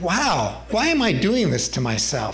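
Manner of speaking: ordinary talk, nothing marked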